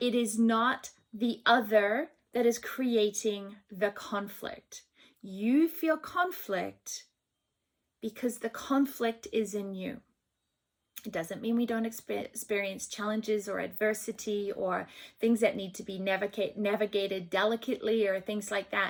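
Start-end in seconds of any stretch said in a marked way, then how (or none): 0.0-10.0 very slow, drawn-out, deliberate delivery. Talking about inner conflict, the speaker says this part real slow. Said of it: "I'm going to say this real slow".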